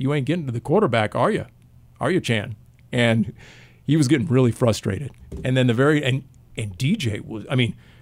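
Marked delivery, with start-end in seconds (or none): none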